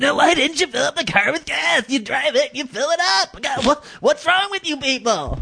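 high, annoyed, whiny elfin grandpa voice.

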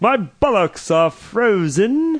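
high, very slow, very drawn-out put-on British accent. Imitating a caller who complained about the cold: imitating a British-sounding accent. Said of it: "It sounded just kinda like a British accent".

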